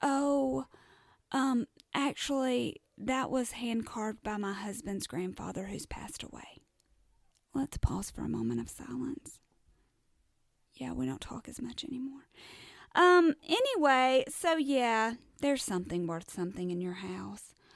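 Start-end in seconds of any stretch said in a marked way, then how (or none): 0.0-6.6 sweetest, sugary, polite voice. Retelling a friend's reply to an apology, imitating the sweetest voice. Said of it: "she responds in the sweetest voice".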